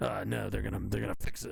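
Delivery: rough, creaky put-on voice. Imitating Tim reacting to ballot fixes: Alex Jones voice. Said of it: "I'm giving him an Alex Jones voice".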